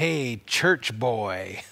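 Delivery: soft, sneering, mocking taunt. Retelling what a neighbor would say as he rode by, imitating a neighbor's mocking tone. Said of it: "he would say in this kind of mocking tone".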